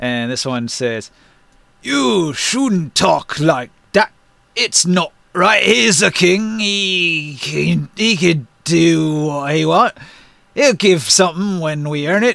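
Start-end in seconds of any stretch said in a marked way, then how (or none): 1.8-12.4 a separate, second giant voice. Voicing a second giant answering Maluk: second giant voice. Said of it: "different voices for each one".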